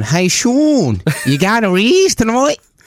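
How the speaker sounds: put-on very high, sing-song New Zealand accent. Retelling what people asked him on the beach, in a New Zealand accent impression. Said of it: "I can do a good impression of Kiwis".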